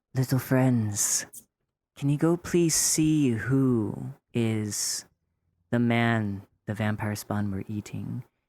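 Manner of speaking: speaking in a whisper. Leaning down to the ground, asking little animal friends for help: whispering. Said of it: "I'm gonna whisper".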